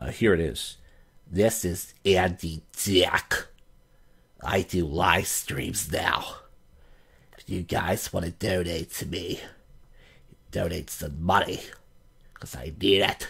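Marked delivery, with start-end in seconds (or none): 1.3-13.3 slow, drawn-out delivery with oddly bent pronunciation. Doing an impression of Andy Dick asking for donations: Andy Dick impression. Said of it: "I actually do an Andy Dick impression".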